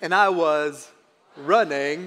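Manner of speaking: put-on drawling Southern accent. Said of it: "say it in his accent when you respond".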